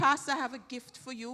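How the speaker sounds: plain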